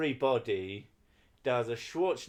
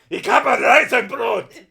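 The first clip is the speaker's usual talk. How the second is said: fake German accent, much higher and louder; 13 semitones higher, 16 dB louder than usual. Repeating a Dutch phrase during a game, in a fake German accent. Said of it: "that's going more to my fake German accent".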